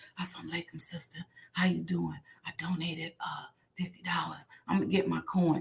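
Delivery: very quiet, scared, fearful whisper. Retelling how supporters call, imitating a caller whispering. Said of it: "Why are you whispering?".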